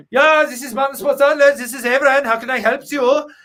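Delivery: put-on Austrian accent. Answering a caller who keeps calling back, doing Avran's Austrian accent. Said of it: "I pretended to be Avran, the Austrian".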